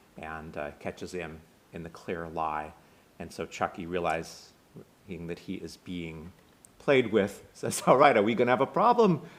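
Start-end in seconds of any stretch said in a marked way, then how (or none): 7.9-9.2 put-on loud Brooklyn accent, rattled off quickly. Retelling a movie scene, voicing Chucky challenging Clark; Chucky's Brooklyn accent. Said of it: "It's a Brooklyn accent, not Boston".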